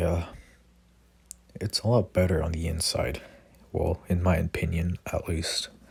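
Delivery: plain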